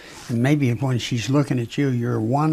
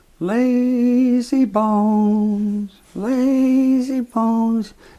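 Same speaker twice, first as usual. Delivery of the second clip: put-on calling voice, even higher pitch; 10 semitones higher, 3 dB louder than usual. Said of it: "And she went up again".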